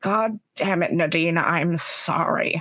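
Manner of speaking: quiet whisper. Voicing a character apologizing before a killing: whispering in character. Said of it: "she's gonna whisper".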